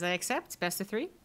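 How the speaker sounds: smug, self-satisfied, superior tone. Voicing a gambler who accepts a bet: smirking. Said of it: "smirks at you and says".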